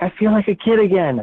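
mock delighted cry, high, breathless, out of breath. Retelling what a woman in the lounge said to her friends, imitating her yelling out. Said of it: "she just yells out".

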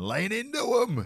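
play-acted, very high-pitched shout. Talking about watching an upcoming game, mock yelling at the TV. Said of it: "I will definitely be yelling at the TV".

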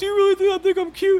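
squeaky, very high put-on talking-dog voice. Retelling how he talks to her through the dog, in a dog's voice. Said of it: "to the dog's voice".

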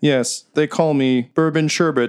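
mechanical robot speech. Voicing a robot telling the players its name: robot voice. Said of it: "My friend, what's your name?".

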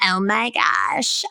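put-on, exclaiming valley girl voice. Showing how not to talk to business owners: imitating a Valley Girl. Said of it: "Don't talk like a Valley Girl".

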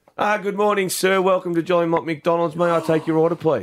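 put-on, overly polite tone. Retelling what the drive-through worker said: imitating an overly polite greeting. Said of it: "never been greeted with such manners".

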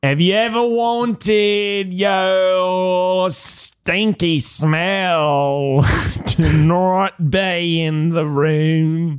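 put-on clumsy British accent. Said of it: "sounds like a Ukrainian man trying to do a British accent".

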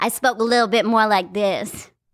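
thick put-on hip-hop-style twang. Recalling how they used to talk growing up, thick hip-hop-y twang. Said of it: "real thick, like, hip-hop-y kind of twang".

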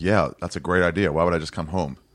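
plain

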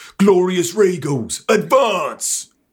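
rallying, very high-pitched battle-cry shout. Charging up a statue under fire, in character: in-character shout. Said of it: "and I'm shouting".

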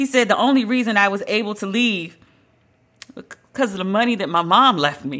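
choked-up voice catching and breaking on the words. Speaker retells what Harry said about being able to leave: choked up. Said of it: "I'm getting choked up just saying it".

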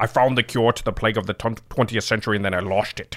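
put-on Scottish movie star voice. Doing an impression after losing track of an ad read: Sean Connery voice. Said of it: "That's Sean Connery".

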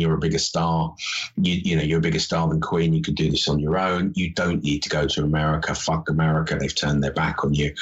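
ordinary delivery

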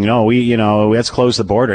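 usual speaking voice

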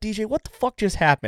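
acted fuming anger. Retelling confronting D J after an upsetting encounter: imitating own angry outburst. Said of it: "just absolutely pissed".

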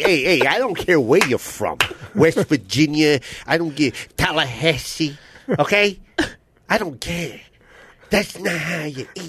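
put-on Italian accent. Imitating Vinny scolding someone about how they eat: Vinny impression, Italian accent. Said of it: "that's my Italian".

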